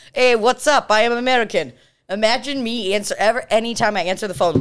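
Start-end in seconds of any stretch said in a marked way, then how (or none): 0.2-1.7 put-on Russian accent, higher pitched. Retelling how buddy Josh McNew answered the phone: Josh McNew's Russian accent. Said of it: "in a Russian accent".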